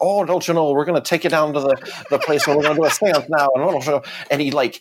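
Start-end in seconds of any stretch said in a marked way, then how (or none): 0.0-3.5 put-on Irish accent. Retelling what the Irish camp counselor said: imitating an Irish accent. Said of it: "we had this Irish, like, camp counselor".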